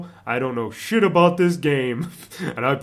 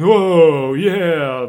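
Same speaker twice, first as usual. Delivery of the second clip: put-on surfer dude voice, louder; 2 semitones higher, 6 dB louder than usual. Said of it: "the Beach Boy kind of thing ... the surfer dude".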